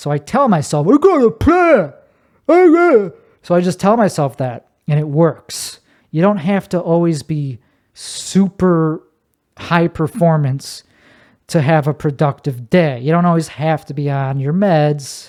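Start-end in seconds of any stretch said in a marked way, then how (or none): 0.9-3.2 very high, slow, dopey, dim-witted stupid voice. Telling yourself to stick to the plan, in that stupid voice. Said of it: "I tell myself in that stupid voice".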